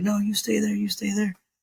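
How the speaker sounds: urgent, high-pitched, loud yell. Recounting a bike crash, the speaker imitates a lady yelling across the street to the driver: retelling a lady's yell. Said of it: "she's like yelling across the street".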